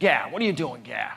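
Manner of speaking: put-on outraged, rapid-fire Boston accent. Speaker mimics their outraged older brother, imitating his boston accent. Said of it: "so he has that accent".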